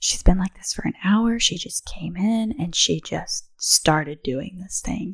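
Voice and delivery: hushed whispered talk. Retelling what midwives said during labor: imitating midwives whispering. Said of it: "hearing some of the midwives whispering".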